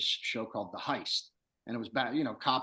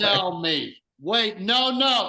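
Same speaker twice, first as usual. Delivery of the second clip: mock loud excited fan, higher pitch, slower; 11 semitones higher, 8 dB louder than usual. Speaker retells how a fan greeted them on a flight, acting out his greeting as an impression of a loud fan. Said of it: "And he would be loud about it".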